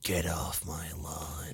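very quiet, very slow, low hushed near-whisper. Describing how a Pokemon looks, in a Clint Eastwood voice. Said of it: "that sort of Clint Eastwood".

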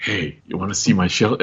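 secretive, hushed, conspiratorial half-whisper. Retelling a character's line about his shelter: conspiratorial half-whisper. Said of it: "He sort of whispers it".

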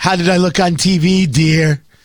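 mocking put-on voice of an official. Mocking Fauci asking how he looked on TV: Fauci impression. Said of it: "I assume that's what he sounds like. That's my impression of him".

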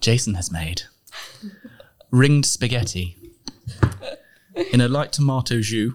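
put-on TV cooking-show narrator announcer voice. Announcing the dish Jason made, cooking-show style: MasterChef voice. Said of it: "I feel like I need to do it in the MasterChef voice".

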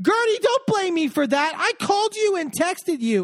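mock very high-pitched shouting. Retelling a fight at a party, imitating Larsa yelling.

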